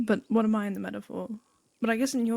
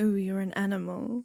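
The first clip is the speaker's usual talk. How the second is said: imitated sensual voice, failing. Teasing a co-host about how they said something, the speaker mimics it mock-sensual, failing. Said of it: "It was trying to be sensual and failing".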